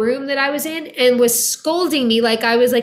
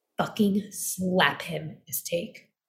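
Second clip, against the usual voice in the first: very hushed, urgent, forceful whisper; 6 semitones lower, 10 dB quieter than usual. Retelling what the director whispered in the ear: imitating a forceful whisper. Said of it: "he whispers in, like, a forceful way".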